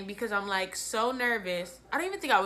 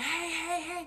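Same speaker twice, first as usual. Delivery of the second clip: high, hushed half-whispered call; 7 semitones higher, 5 dB quieter than usual. Retelling being stranded with a dead phone, everyone gone: retelling half-whispering 'hey'. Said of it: "I'm whispering".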